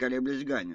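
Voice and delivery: ordinary delivery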